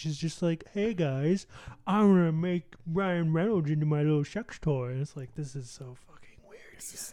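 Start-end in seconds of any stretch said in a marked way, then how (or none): 0.7-4.9 put-on voice with jutted jaw. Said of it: "she juts out her, her bottom jaw".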